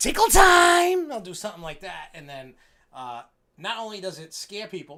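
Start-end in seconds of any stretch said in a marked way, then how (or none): 0.0-1.1 shrieking creepy clown voice, very high, loud, "time" drawn out. Describing bursting through a wall to scare people, clown voice. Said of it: "perfecting my clown voice".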